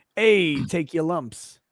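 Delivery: gangster voice, New York accent. Answering an agree-or-disagree question: new york gangster voice. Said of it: "in New York gangster voice".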